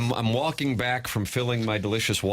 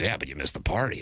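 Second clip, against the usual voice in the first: put-on radio announcer voice, lower pitch; 4 semitones lower than usual. Retelling what Riz said, doing a Riz impression. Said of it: "I'm trying to do my Riz impression".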